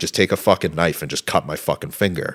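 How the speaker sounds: usual speaking voice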